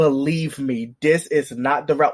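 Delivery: frightened, hyperventilating, breathless voice. Retelling a character's warning while hyperventilating: imitating a scared plea. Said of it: "you could see him being like".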